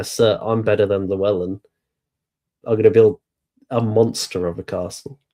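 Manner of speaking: normal talking voice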